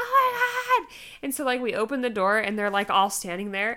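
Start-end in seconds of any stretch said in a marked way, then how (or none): 0.0-0.9 piercing, very high, shrill scream. Recounting going into labor, speaker is reenacting screaming. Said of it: "And I'm like screaming and like".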